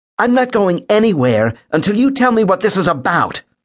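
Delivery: very high-pitched, sharp, snapping voice. Narrating a story, a woman answers Callan while he waits, snapping. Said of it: "she snapped".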